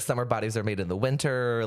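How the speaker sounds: normal talking voice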